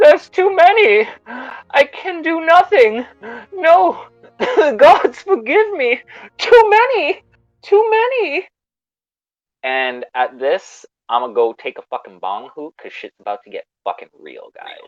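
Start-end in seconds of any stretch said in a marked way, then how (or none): 0.0-8.5 very high, very loud, trembling, quavering cry. Game master voicing an unseen figure calling down the tower, quavering voice. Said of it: "a quavering voice reaches down".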